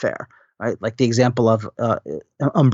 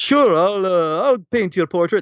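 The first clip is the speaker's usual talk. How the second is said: bad put-on Italian accent, pitched up; 7 semitones higher than usual. Telling an anecdote, answering a woman's portrait request; bad Pablo Picasso impression. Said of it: "I don't do a very good Pablo Picasso".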